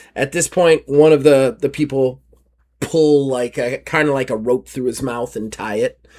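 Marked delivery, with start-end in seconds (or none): none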